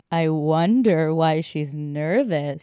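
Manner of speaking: slow, heavy, knowing, suggestive delivery. Retrying a line after being told it needs more innuendo: heavy innuendo. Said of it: "You need a little bit more innuendo next time. ... let me try that again".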